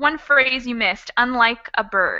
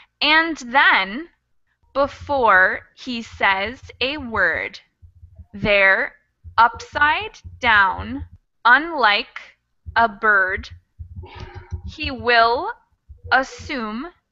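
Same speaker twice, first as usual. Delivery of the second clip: slow, unhurried, poetry-style reading. Reading the same verse aloud one more time, slower reading. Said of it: "one more time slower".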